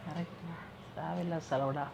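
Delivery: soft, close, patient and calm voice. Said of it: "பொறுமையா கிட்ட வந்து சொல்ற".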